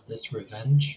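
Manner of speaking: very hushed, private tone. Voicing a character alone with another, in a very hushed tone. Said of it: "in a very hushed tone".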